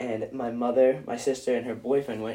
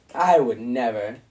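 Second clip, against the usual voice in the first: loud, thick, plainly insincere sarcasm; 7 dB louder than usual. Answering whether they walked out with the glasses unpaid: sarcastic. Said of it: "You said that pretty sarcastically".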